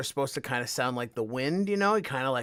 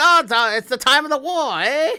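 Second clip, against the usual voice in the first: shrill, raised, loud, high vaudeville-era patter; 13 semitones higher, 10 dB louder than usual. Describing how ghosts from vaudeville times would talk, in old-timey vaudeville talk. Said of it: "the vaudeville times. So they're gonna talk like".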